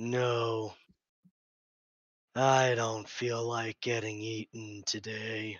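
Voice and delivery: monster creature voice. Narrating a creature's reply after a player rolls a zero intelligence check, creature voice. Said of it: "this creature says".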